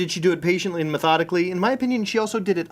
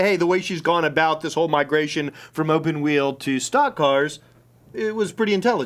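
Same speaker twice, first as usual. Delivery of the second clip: ordinary talk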